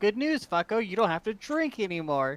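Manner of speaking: loud, shrill, grating annoying voice. Player dumping water on Jonathan to wake him, in the most annoying voice imaginable. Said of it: "in the most annoying voice I could possibly imagine".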